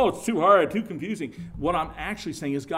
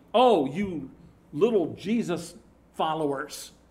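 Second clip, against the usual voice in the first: sneering, mocking, scoffing jeer. Describing how the world treats those who walk with the Lord: mocking imitation of scoffers. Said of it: "They'll say mockingly".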